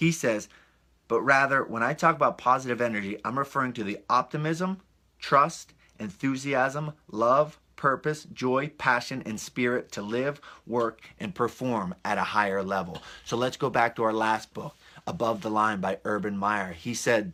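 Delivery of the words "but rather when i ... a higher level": ordinary delivery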